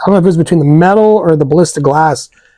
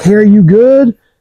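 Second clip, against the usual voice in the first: raised, high yelling voice; 5 semitones higher, 4 dB louder than usual. Retelling yelling at a buddy who slumped down under fire: retelling a yell. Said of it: "yelling at him".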